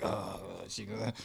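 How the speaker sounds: very soft timid murmur. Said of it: "timid, like".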